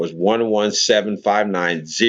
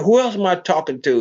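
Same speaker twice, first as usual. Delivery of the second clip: very high, harsh, rude-sounding snap; 9 semitones higher than usual. Retelling the C O's harsh reply after being pointed at: imitating a harsh retort. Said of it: "He didn't say it that nicely".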